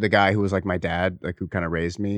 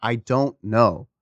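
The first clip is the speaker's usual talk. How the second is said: mock sobbing speech, higher pitch; 4 semitones higher than usual. Recounting answering his ex-wife's question: imitating sobbing speech. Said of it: "while I'm sobbing".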